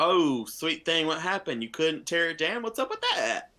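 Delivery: put-on mother voice. Narrating a scene where Barbara walks over: passive-aggressive Barbara voice. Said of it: "the passive aggressive mother everybody hates".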